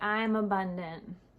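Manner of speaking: deadpan, flat, lifeless, no energy behind it. Example of reading from your paper: flat, no energy. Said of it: "like that, right? ... There's no energy behind that".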